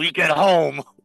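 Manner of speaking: low hissed whisper-yell through teeth. Voicing a character scolding someone: low yelling whisper through teeth. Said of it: "a low yelling whisper through her teeth".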